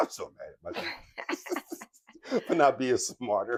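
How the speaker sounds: slow, laughing, self-mocking delivery.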